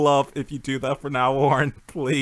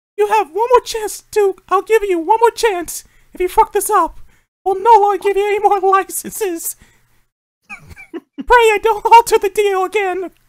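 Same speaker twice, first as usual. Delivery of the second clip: very high-pitched, loud, cartoony voice; 7 dB louder than usual. Speaker imagines Mickey Mouse dressed as Darth Vader addressing EA, Mickey Mouse voice. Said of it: "Mickey Mouse wearing like his little Darth Vader outfit".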